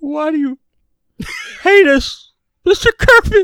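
very high, loud, put-on sobbing. The speaker tries out whether he can do his crying: fake crying. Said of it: "let me see if I can do my crying".

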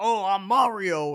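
put-on loud, belted New York accent. Talking about Mario cartoons with another speaker, doing Mario as a New York guy. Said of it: "like this like like guy from New York Mario".

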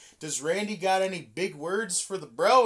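ordinary delivery

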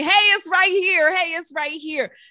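playful, high-pitched shouting. Describing their mission as raising an alarm about community: mock shouting like Paul Revere. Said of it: "I'm Paul Revere screaming on a horse".

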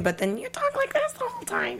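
very high, soft helium-like squeak.

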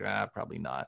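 low, soft, sheepish admitting tone. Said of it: "sheepishly grin and be like".

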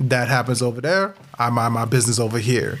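ordinary talk, nothing marked

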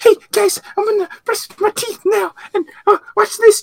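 loud, high-pitched announcing voice. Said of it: "if it was [name], it'd be like".

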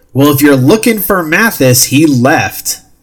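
loud, high shout, calling out. The game narrator voices a man calling to the players, shouting across a hallway. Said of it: "he shouts across the hallway".

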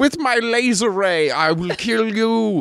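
put-on shrill, very high, slow, drawn-out German mad-scientist accent. Quoting the rival villain Doctor Phibes: German mad scientist Doctor Phibes voice. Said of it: "German mad scientist kinda".

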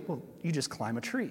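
put-on very nonchalant, offhand, casual, unbothered tone. Retelling the truck driver's reply to a question: imitating a nonchalant reply. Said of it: "very nonchalantly".

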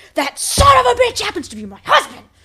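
high, loud, furious shout.

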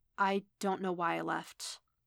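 ordinary delivery

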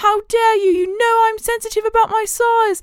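bad, shaky British accent, very high pitched. Speaker recounts the cat's line to another cat on a seesaw: Bustopher Jones, bad British accent. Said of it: "That's not my real British accent".

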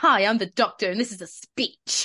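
loud advert announcer voiceover voice. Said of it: "that sounded like Barry Scott".

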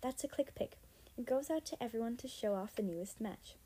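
plain

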